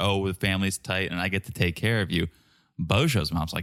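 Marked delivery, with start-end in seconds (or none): none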